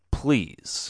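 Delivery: heavy stress leaning on the word "please". An officer asks a driver for license and registration, stressing the word please. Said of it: "as he emphasized the word please".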